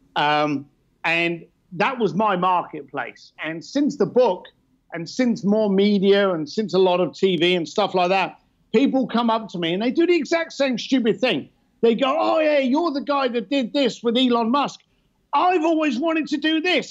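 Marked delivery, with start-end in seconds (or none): 12.2-16.9 excited, eager, thrilled gushing, pitched up. The speaker retells how people who recognize him come up to him, imitating an excited fan. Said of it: "all this excitement in their voice".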